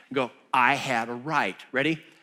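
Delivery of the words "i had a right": slow, sassy, defiant delivery with attitude. Leading the listeners in repeating a phrase: saying it with attitude. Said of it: "say it with some attitude".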